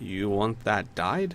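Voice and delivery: puzzled, confused voice. Voicing a shopkeeper puzzled by a scrap of fabric: confused shopkeeper voice. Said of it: "he will look at it confused and be like".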